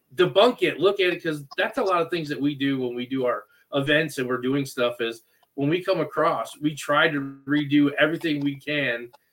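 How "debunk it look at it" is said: mock screaming, pitched up and shouted out. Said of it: "screaming at these people".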